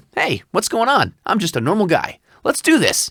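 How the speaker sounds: relaxed guy-next-door read. Showing his biggest voiceover commercial read: conversational everyman commercial read. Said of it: "my biggest commercial read is the conversational everyman".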